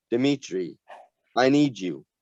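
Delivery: ordinary delivery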